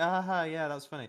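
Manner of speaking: put-on forced, polite laugh, fake amusement. Retelling trying not to be rude to someone's joke: imitating a forced polite laugh. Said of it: "trying not to be rude to someone when they're trying to make a joke".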